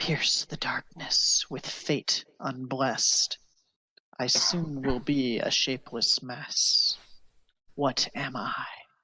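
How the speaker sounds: mild, gentle voice. Narrating a scene, the speaker voices a voice heard inside your head, very soft. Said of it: "this very soft voice inside your head".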